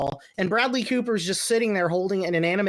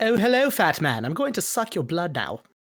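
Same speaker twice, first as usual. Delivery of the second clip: put-on swooping baby vampire voice. Acting out a baby vampire walking up to someone: baby vampire voice. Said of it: "This walks up".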